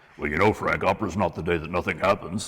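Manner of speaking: put-on villain voice. Trying out a suggested voice for King Herod: David Crawford voice. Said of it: "a David Crawford voice for Herod".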